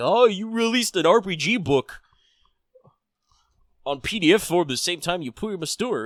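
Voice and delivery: high, whiny, petty, snooty shopkeeper voice. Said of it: "so petty and snooty to be like".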